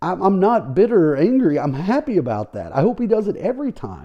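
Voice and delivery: openly joyful voice. Speaker whose earlier prediction about a player proved wrong, talking about it: happy. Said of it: "you hear the happiness in my voice".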